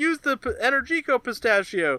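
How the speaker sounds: high, mock yell in a grandpa voice.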